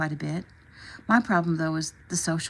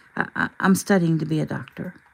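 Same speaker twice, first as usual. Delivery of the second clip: ordinary delivery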